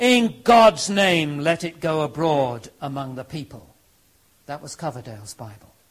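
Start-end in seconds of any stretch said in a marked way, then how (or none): 0.0-3.7 loud roaring voice. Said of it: "roared the king".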